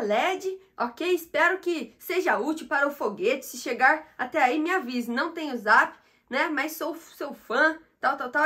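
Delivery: ordinary talk, nothing marked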